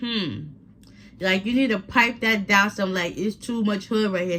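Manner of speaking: ordinary talk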